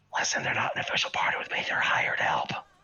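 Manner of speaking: breathy whispered aside. As Malark, speaking to the others in the scene, whispering. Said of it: "he like whispers".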